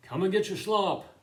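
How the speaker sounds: booming, very loud, big, high call-out. Speaker retells how he called everyone over to eat, calling out in a big voice. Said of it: "he would call out in a big voice".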